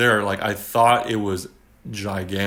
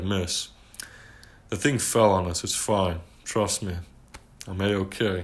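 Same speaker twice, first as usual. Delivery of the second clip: composed, stoic, even, matter-of-fact delivery; 5 dB quieter than usual. Retelling explaining to the teacher after something fell: imitating a stoic explanation. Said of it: "I explain all stoically".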